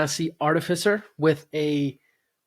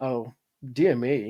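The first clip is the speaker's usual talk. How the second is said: low, prim and proper voice; 4 semitones lower, 4 dB quieter than usual. Describing a character's manner, the speaker demos a prim and proper Obi-Wan Kenobi voice. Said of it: "He's almost like prim and proper".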